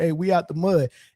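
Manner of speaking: ordinary delivery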